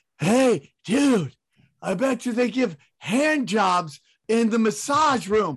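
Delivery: mock loud, high stage whisper. Retelling what a companion said while waiting around: imitating Howie Dewey's loud whisper. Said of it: "he whispers like he's talking at, under a helicopter".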